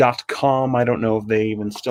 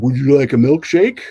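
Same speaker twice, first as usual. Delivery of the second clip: loud, odd, weird voice as if tongueless; 2 semitones higher, 5 dB louder than usual. Retelling how his dad offered a milkshake pretending to have no tongue, weird tongueless voice. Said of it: "in like a weird sort of tongueless voice".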